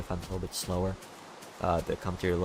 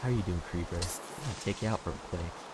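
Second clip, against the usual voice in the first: soft, gentle, easygoing, quick delivery. Giving an example line in a calmer commentary voice: softer, slower chill tone. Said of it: "Just do an example here".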